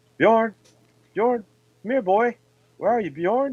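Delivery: mock sad, high-pitched, forlorn ghostly calling voice. Retelling what they heard in a basement well, a ghost calls out: imitating a forlorn ghostly voice. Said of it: "this ghostly voice calling out".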